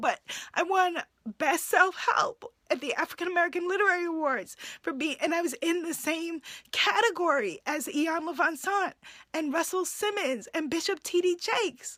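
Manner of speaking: teary, choked-up voice. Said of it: "I'm getting teary talking about it now".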